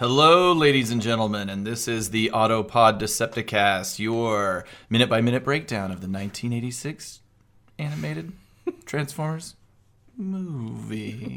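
put-on sexy, mock seductive tone. Opening the podcast episode as a joke: put-on sexy intro voice. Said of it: "getting a little sexy with the intro".

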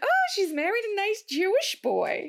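very high, lilting, swooping, drawn-out put-on woman's voice. Imitating a grandfather's remark, in a woman's voice. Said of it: "I said that like a woman".

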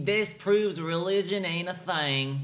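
put-on rural Georgia Southern accent. Voicing how hyper-religious people would use that logic: Georgian accent. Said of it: "That was that Georgian accent".

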